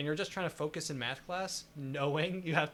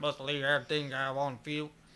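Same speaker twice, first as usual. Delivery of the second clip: sports-star voice with a slight frog-like croak. Imitating Patrick Mahomes after hearing him: Patrick Mahomes impression, Kermit-like. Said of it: "a bit of a Kermit thing going".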